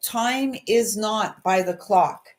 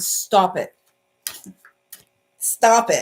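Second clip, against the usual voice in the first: stern motherly voice, very slow and drawn out. Speaker cuts off the listener's giving up on a dream: stern mom voice. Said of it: "That's my stern mom voice".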